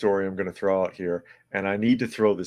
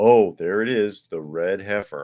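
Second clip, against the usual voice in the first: sarcasm-laden, scornful, mocking exclaimed tone; 4 dB louder than usual. Reacting to a headline just read aloud: sarcastic. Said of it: "I'm gonna be sarcastic".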